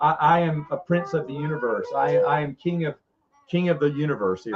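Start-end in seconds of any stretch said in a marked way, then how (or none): none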